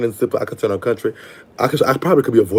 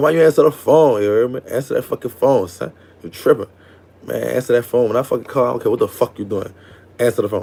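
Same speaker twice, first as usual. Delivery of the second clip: ordinary delivery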